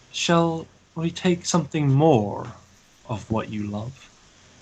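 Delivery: malicious, breathy stage whisper. A narrator voices a mysterious voice speaking to Ren in a malicious half-whisper. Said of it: "The voice whispers, Ren, to you almost maliciously".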